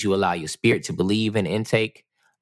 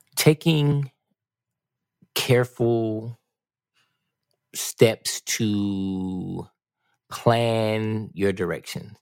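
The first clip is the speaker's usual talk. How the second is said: slow, measured, deliberate delivery with breaks. A host answers JP's question for their audience: said a bit slowly. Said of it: "I said that kind of slow".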